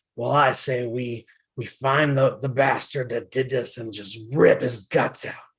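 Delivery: really rough, gruff voice. Narrator voices one of several beings arguing about what to do: gruff voice. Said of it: "a really gruff voice say".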